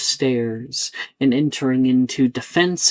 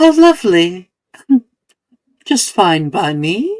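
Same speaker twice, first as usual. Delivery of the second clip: small, high-pitched, cheery, happy little voice; 6 semitones higher, 7 dB louder than usual. A rose answers a request to heal a friend, in Titania's little happy voice. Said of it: "it says with a little happy voice".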